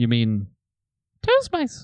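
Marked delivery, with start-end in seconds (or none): 1.2-1.9 very high, squeaky mouse voice. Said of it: "read his emails back in a mouse voice".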